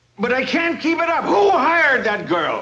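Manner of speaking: loud, high-pitched, frazzled, raw-nerved yelling. A boss to Blondie, who then begs him not to be so loud, shouting. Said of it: "not so loud".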